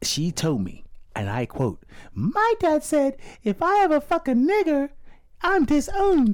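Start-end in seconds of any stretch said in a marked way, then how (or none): 2.1-6.3 very high, taunting, mocking singsong voice. Quoting what a woman once told him, in a mocking imitation of her. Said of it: "I'm mocking her".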